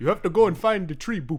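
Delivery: Ugandan-accented voice, ending on a boop. Demonstrate guys who speak this way, in a Ugandan accent, ending on a boop. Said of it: "speak in a like let's say like Ugandan accent, but then they just go boop at the end".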